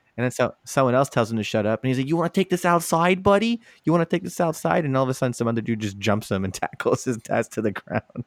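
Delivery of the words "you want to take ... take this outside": put-on Long Island accent, pitched up. Retelling a man answering someone who told him to shut up, Long Island accent. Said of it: "it's that long island accent".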